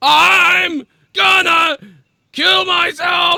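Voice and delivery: play-acted very high, very slow, shrill raging scream. Listing the twelve deaths of Christmas, imitating Tommy flipping out. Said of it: "Four Tommy flipping".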